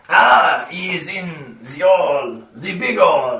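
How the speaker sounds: English spoken in a put-on French accent. Answering players who ask where to find the goblin chieftain: French accent. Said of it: "Why has everybody started talking in a French accent?".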